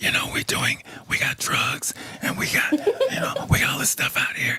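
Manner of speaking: hushed, secretive, confiding whisper, ashamed-sounding. Retelling what friends said on calls to the speaker: imitating friends whispering. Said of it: "and then they would start to whisper".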